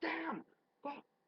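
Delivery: put-on very high, shrieking screams. Retelling someone at the gym lifting dumbbells: imitating someone yelling cuss words. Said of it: "you're yelling".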